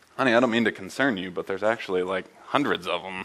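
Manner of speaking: ordinary delivery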